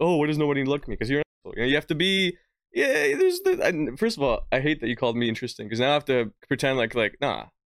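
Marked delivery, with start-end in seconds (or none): 0.0-1.0 mocking, clueless put-on voice. Imitating a clueless listener who misread the podcast: imitating a clueless goober. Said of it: "and they're like".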